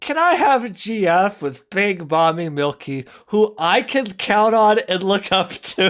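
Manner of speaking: high-pitched, giggling, laughing through the words. Trying to say a line without cracking up, laughing while talking. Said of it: "can I do this without laughing?".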